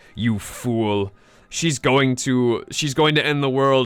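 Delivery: chiding, scolding storybook narrator voice. Retelling what the game's narrator says: imitating the narrator scolding. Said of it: "the narrator is just like".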